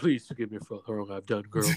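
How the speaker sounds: deep, low-pitched voice. Imitating a group member from childhood: deep voice imitating Michael. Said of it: "That deep ass voice".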